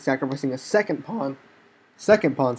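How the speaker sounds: voice cracking. A player narrating a chess game to viewers, voice cracking. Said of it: "sorry, my voice cracked".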